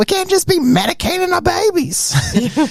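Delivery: very high-pitched man's voice, way up. Retelling what a man said to them, imitating a high-pitched voice. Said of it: "so he's got this real high pitched voice".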